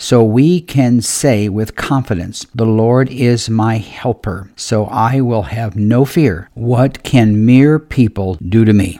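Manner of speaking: unhurried, deliberate reading, each word savored. The speaker rereads a Hebrews verse for listeners to savor, reading slower. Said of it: "Let me read a little bit slower".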